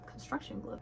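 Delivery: soft, breathless, stunned whisper of disbelief.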